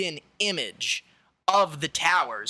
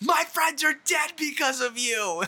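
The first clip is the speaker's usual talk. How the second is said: put-on very high, shrill, pained scream; 11 semitones higher than usual. Retelling a man screaming at the president while dragged out by security, reenacted screaming. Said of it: "just screaming at fucking President Bush".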